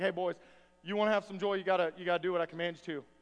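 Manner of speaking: down-to-earth, matter-of-fact, casual and direct. Retelling in modern words what Jesus tells the disciples: imitating Jesus. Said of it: "Jesus is like".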